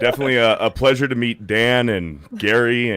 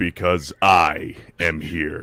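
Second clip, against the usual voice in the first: put-on anime hero voice, pitched lower; 6 semitones lower than usual. Doing a voice after a co-host asks for it: All Might voice. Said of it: "I can do better".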